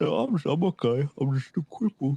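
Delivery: sad-sounding voice. Answering a caller who asks if everything is okay: sounding sad. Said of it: "You sound sad".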